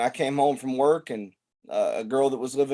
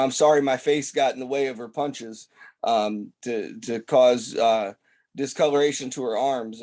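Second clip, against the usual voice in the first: ordinary delivery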